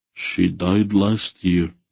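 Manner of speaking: emotionless, level, flat unemotional voice. A man answers a polite question about his wife, flat, unemotional voice. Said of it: "in a flat, unemotional voice".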